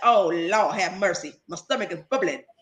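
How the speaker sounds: put-on old man voice. Retelling a food video creator's reaction: imitating an old dude. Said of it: "And he said".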